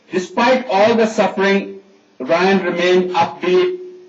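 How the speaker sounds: ordinary talk, nothing marked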